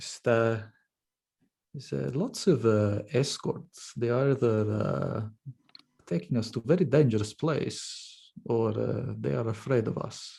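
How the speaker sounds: whispered in a put-on character voice. Whispering in character to a brother while being escorted through a city: whispering in character. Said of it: "whisper to my brother in Undercommon".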